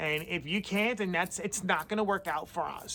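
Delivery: smirky, rude, smug-toned delivery. Retelling a rude boss's daily calls: imitating a boss's smirky attitude. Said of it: "with the smirkiest attitude".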